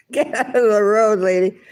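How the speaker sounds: mock cop barking through a bullhorn, high yell. Retelling what was yelled at them through a bullhorn: imitating a bullhorn yell. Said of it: "they yelled at it through a bullhorn going".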